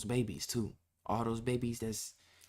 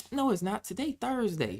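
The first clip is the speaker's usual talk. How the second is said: put-on granny voice, very high and swooping; 10 semitones higher, 5 dB louder than usual. Retelling a little girl talking on the phone, imitating a little old lady. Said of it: "talking like a little old lady".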